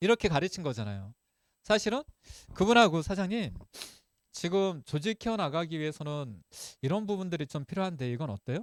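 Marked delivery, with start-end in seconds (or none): 3.0-8.6 calm, soft, gentle speaking. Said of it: "앉아서 조곤조곤 이야기하면서".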